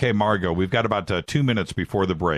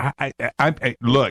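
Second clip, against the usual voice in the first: stuttering, stammering, much slower and higher; 4 semitones higher than usual. Show host, watching something happen in the studio, stuttering. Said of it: "I want everybody to know I'm stuttering".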